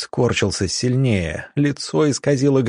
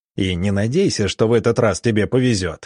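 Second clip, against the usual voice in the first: ordinary delivery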